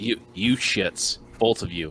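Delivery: intimidating, threatening tone. Acting out a character confronting two kids: intimidating. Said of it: "I'm gonna try to make an intimidation check".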